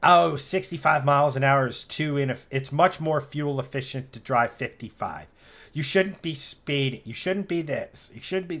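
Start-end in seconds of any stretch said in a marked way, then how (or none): none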